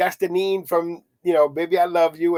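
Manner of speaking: ordinary delivery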